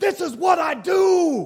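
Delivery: high, loud, proud, triumphant yelling.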